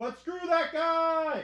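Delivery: shouting. Closing out a stream while yelling into the mic: yelling into the mic. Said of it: "'cause I'm yelling".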